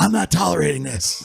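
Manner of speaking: fake rasping, guttural voice. Acting out her answer to a reasonable press conference question, imitating a raspy, guttural voice. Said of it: "she had this like raspy, guttural voice".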